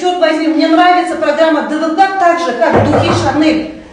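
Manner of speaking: shouting loudly.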